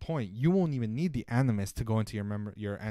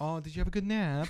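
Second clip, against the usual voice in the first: put-on British-accented voice, higher pitch; 7 semitones higher than usual. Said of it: "In his British accent".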